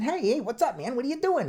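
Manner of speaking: very high-pitched, casual little voice. Giving a big person a sudden surprising voice: real high-pitched voice. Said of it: "all of a sudden they have a real high pitched voice".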